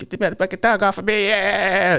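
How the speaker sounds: put-on loud Jamaican-accented scream. Retelling a brother's scream as a dog attacks: imitating a brother screaming loud, Jamaican-sounding. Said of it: "he's screaming real loud like a Jamaican".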